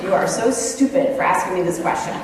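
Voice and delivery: normal talking voice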